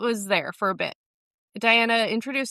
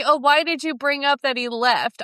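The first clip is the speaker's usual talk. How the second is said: acted, mock angry, pissed-off snapping tone; 4 semitones higher, 3 dB louder than usual. Retelling a scene where Diana takes offense at her dance partner, imitating someone angry. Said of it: "Diana gets all pissed".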